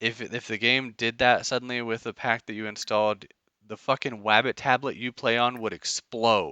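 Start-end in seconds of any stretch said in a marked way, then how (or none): none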